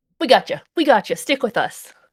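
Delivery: chipper, cheerful character voice. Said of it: "She sounds really chipper when she says it".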